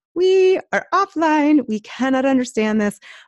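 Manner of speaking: put-on high, childlike little-kid voice. Acting out a brain going offline: high childlike offline voice. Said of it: "your offline voice becomes higher".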